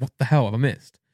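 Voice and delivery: ordinary talk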